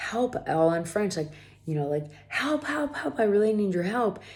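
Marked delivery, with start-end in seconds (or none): 2.3-4.2 acted scream, much higher pitch. Telling of a dog attack, re-enacting calling to the owner, retelling a scream for help. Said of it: "I start screaming like".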